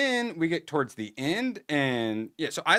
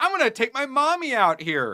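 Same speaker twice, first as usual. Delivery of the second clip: put-on high, sniveling, whiny British boy voice; 9 semitones higher, 3 dB louder than usual. Retelling what the kid character says: imitating a whiny boy. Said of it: "British version of a whiny anime character".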